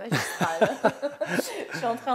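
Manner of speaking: loud, high laughing through the words.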